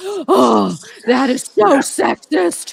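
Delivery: put-on outrage. Retelling comments from people angry about the word guys: imitating an offended commenter. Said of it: "getting pissed off at me".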